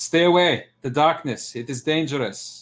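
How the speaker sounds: loud, high-pitched shouted call. A player's character warns the compatriots away from the darkness: shouting a warning. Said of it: "I shout out".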